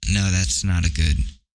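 normal talking voice

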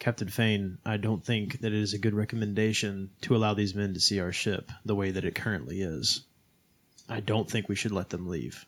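whispering. Playing Ark, telling Captain Fane privately not to let the men leave: whispering into someone's ear. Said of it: "Can Ark whisper something into Fane's ear?".

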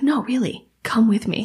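extremely creepy, insistent, coaxing tone. Retelling how a stranger insisted she follow him: imitating a creepy invitation. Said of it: "in the creepiest way possible".

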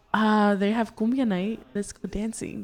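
ordinary talk, nothing marked

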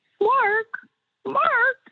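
very high, tiny little puppet voice. Retelling a man calling his name through a puppet, in a little Arthur puppet voice. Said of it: "I heard this little voice behind me".

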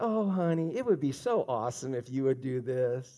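very low, soft, honey-sweet, sugary tone. Addressing parents, mimicking how they coax their child, in a low, sweet voice. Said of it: "speak to your child in that low, sweet voice".

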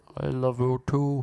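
slow, put-on talking dog voice. Retelling how a woman answered herself as her dog: imitating a dog voice. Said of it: "with a dog voice".

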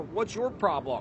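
ordinary talk, nothing marked

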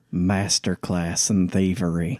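leaned-in, hushed half-whisper. Leaning over to Juliet during a game scene: half-whispering in character. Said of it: "I just lean over to Juliet and I whisper".

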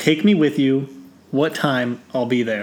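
ordinary talk

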